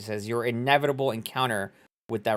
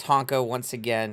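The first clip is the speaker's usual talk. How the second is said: ordinary talk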